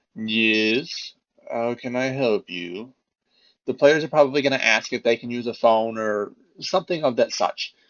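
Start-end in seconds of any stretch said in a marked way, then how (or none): 0.2-2.9 somber, very slow, flat monotone butler voice. Narrating for the players, the butler opens the door, monotone butler voice. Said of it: "He's just very monotone".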